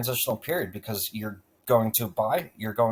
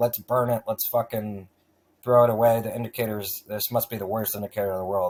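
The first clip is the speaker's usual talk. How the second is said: ordinary delivery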